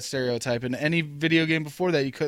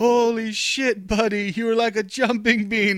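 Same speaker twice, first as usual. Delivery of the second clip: put-on laughing speech, higher; 6 semitones higher, 3 dB louder than usual. Retelling what someone in a tree said about the jump: imitating someone laughing while talking. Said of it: "he's fucking laughing his ass off".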